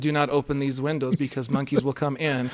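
ordinary talk

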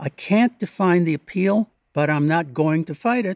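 ordinary talk, nothing marked

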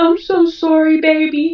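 acted crying, very slow, high and drawn out. Retelling how he called her on her lunch break, imitating him crying. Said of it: "and he's crying".

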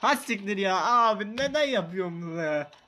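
speaking through helpless laughter, cracking up mid-sentence. Playing a game and reacting to it, laughing hard while talking. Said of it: "gülmekten sıçtım".

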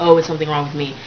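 ordinary talk

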